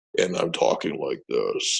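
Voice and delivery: voice sunk right down, very low. Retelling talking to a man as the voice changed, imitating own dropped low voice. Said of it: "my voice is dropping down like this".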